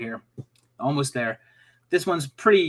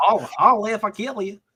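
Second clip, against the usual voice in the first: put-on strange Southern accent; 7 semitones higher than usual. Repeating the quiz title after being teased, put-on strange southern accent. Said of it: "It was a strange Southern accent".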